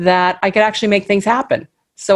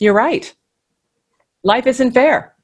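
mock dry, level, unbothered, flat deadpan; 4 semitones higher than usual. Speaker retelling mom's reply to a child saying it's not fair: deadpan. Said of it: "just deadpan".

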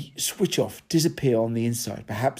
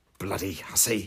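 muttered, mumbled, lower and quieter; 4 semitones lower, 6 dB quieter than usual. A woman beside the narrator reacts to another's remark; muttering. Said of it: "The woman sitting next to me muttered".

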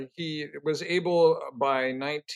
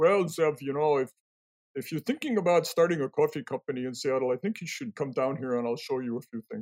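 put-on Dutch accent. Quoting a man the speaker had chatted with: Dutch accent. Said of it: "in his wonderful Dutch accent".

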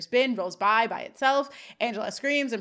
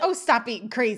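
ordinary talk

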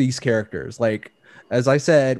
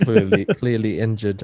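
bad, barely-there, failed attempt at Russian accent; 3 semitones lower than usual. Trying the same movie line after admitting failure: attempted Russian accent. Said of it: "I can't do the Russian".

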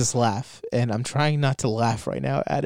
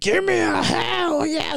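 very high, slow, smug, taunting, mocking drawl. Describing a clip, the speaker imitates Chris Jericho's mockery of Stone Cold. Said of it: "He sounds like such a douchebag, like".

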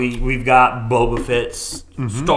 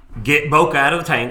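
urgent in-character voice, called out; 3 semitones higher than usual. Under fire from a ship behind them, giving an order to the crew, yelling. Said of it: "I'm yelling".

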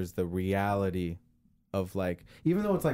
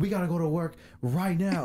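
put-on angry outburst, higher; 8 semitones higher than usual. Retelling how dad reacted to forgotten laundry: imitating dad losing his temper. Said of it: "Loses it".

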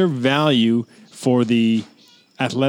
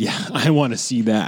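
mimicked sarcastic tone. Imitating the other speaker's tone back to him: imitating a sarcastic tone. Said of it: "there's a tone there of like".

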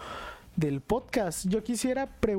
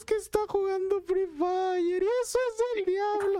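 very high, weepy, sobbing crying whine; 12 semitones higher than usual. Speaker retells a girl crying over a game, imitating her crying. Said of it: "Y se pone a llorar".

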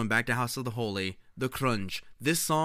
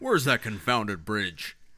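put-on American accent. Quoting another man's line a second time, in an American accent. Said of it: "he does a very good, like... American accent".

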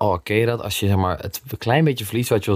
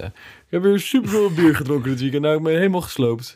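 fake posh upper-class accent, much higher; 8 semitones higher than usual. Mocking how some rappers talk, the speaker puts on a posh accent. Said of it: "ik wil een soort kakaccentje zetten".

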